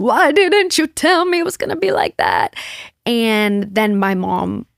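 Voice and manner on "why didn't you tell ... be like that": put-on sobbing cry, high and swooping, through tears. Retelling own words after coming home from a biopsy: imitating own past sobbing. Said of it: "basically sobbing, crying".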